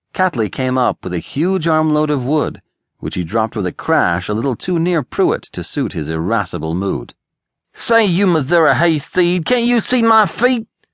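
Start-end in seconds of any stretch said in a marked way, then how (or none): 7.7-10.6 very high, demanding outburst. Pruitt confronts Catley, who dropped wood near him; demanding. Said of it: "he demanded".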